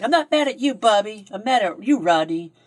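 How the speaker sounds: screaming with pitch up high. Retelling how Tiffany's mom turned around on the kids, retelling a scream. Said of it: "starts screaming".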